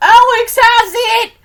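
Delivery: piercing shriek, very high and very loud. Recounting a girl who came up from behind and screamed out; retelling a scream. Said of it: "screams out".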